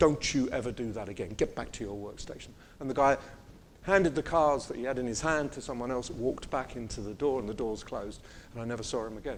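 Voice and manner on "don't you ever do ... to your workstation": put-on loud aggressive whisper, lower pitch. Retelling how a man scolded a helper in a queue: imitating loud aggressive whispers. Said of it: "he's whispering na-, loud, aggressive whispers".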